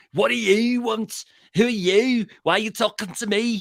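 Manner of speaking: put-on brusque, rude Liverpool accent, pitched very high. Imitating a man who is always rude when the camera comes up to him, real Liverpool accent. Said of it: "He's got a real Liverpool accent".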